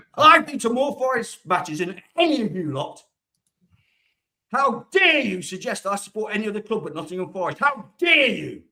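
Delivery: irritated, fed-up, really annoyed outburst. Speaking in a chat after being baited: really annoyed. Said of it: "really annoyed".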